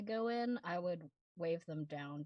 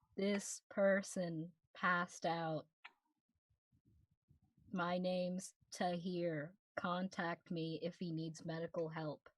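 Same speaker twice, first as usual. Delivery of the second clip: much slower, deliberate speech with spaced-out wording. Showing what he'd say to someone about a person who passed out, speaking much slower. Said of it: "much slower".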